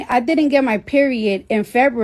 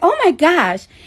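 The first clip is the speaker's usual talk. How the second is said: put-on Staten Island girl accent, higher; 6 semitones higher than usual. Retelling her OB-GYN's reaction during a sonogram, imitating a Staten Island girl accent.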